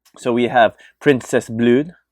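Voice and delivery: put-on French accent. Creator introducing portraits of characters from a world they made, french accent. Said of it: "I don't know why I do with a French accent".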